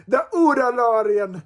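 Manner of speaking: failed Irish accent drifting into Jamaican accent. Host announces the week's winner while trying an Irish accent: failed Irish accent, sounds Jamaican. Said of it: "That came out Jamaican".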